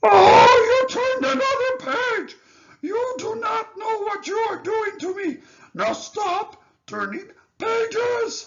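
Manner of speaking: very loud, high, lovable, furry puppet-monster voice. Begging the reader to stop turning pages, lovable furry old character voice. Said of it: "starring lovable, furry old [name]".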